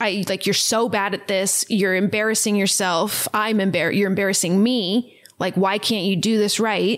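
ordinary delivery

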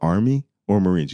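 understated, low-key, plainly spoken delivery. After going dark, asking the man spotted on the buildings: retelling speaking real quietly. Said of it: "Real quietly".

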